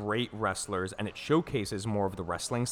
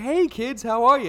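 put-on very high, very loud kids' TV host voice; 10 dB louder than usual. Describing a wrestler's gimmick, imitating Bray Wyatt as kids' show host. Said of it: "he's a children's, like, talk show host".

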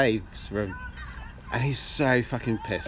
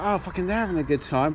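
ordinary talk, nothing marked

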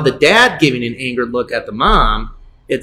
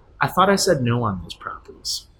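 put-on calm voice, quieter; 2 semitones lower, 9 dB quieter than usual. Retelling what a man said very calmly to a woman, imitating someone sounding calm. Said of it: "he very calmly goes to her".

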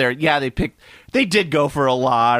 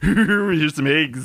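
put-on spooky actor voice. Joking about the movie's Egghead: Vincent Price impression as Egghead. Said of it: "doing a Vincent Price impression for Egghead".

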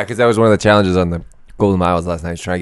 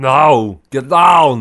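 put-on pitched-up Austrian accent with a long, drawn-out "no"; 7 semitones higher, 4 dB louder than usual. Doing an Arnold Schwarzenegger impression for a laugh: Arnold Schwarzenegger impression. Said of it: "that's how bad his accent is".

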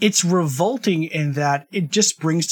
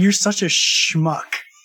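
mock disdainful, scornful tone; 3 semitones higher than usual. Retelling how the old matron answers Egerman: imitating a disdainful remark. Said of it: "it's so disdainful".

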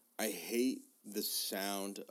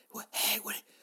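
loud, high-pitched, carrying stage whisper. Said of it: "I'm a bad whisperer".

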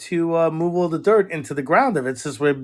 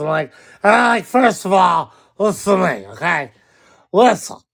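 put-on drunk voice, louder; 5 dB louder than usual. Mimicking the speaker's wife when she's drunk, Sauce McGee's drunk voice. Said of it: "she talks like this".

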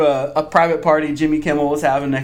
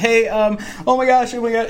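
acted high, flustered, panicky, frantic gushing babble; 8 semitones higher than usual. Retelling a quick FaceTime call to his wife; retelling freaking out. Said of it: "i'm like freaking out".

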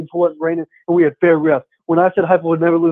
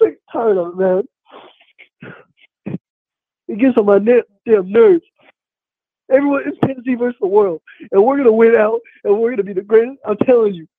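high fake sobbing, laughing through the crying; 5 semitones higher than usual. Putting on an emotional rant while the listener hears the laughing: fake crying, laughing. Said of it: "you're laughing in between those fake crying noises".

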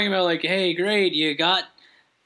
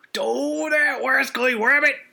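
put-on cartoon cowboy voice, higher; 7 semitones higher than usual. Describing the game's inspector, then voicing him: Yosemite Sam voice. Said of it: "the inspector sounds like Yosemite Sam".

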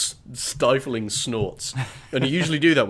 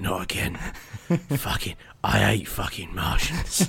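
grumbled mutter under the breath; 3 semitones lower than usual. Speaker retelling a scene where a man turns to the camera, muttering. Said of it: "and just mutters".

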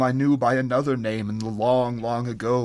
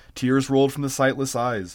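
ordinary delivery

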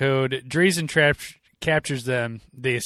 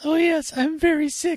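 put-on very high, silly voice, spoken slowly. Retelling a movie's cross-dressing gag: imitating a high voice. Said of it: "talking in a high voice".

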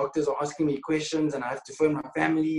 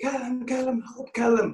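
acted, shrill, very high-pitched screaming; 10 semitones higher than usual. Retelling being on the ground and calling out, re-enacting screaming for help. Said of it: "So I start screaming".

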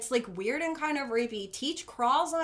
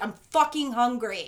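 put-on fierce, mean voice; 6 dB louder than usual. Describing a film character's turn, the speaker acts out her fierce, mean line. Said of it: "she gets real fierce, like, and mean".

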